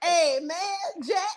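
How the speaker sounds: put-on regular tone, barely shifted toward an old man voice.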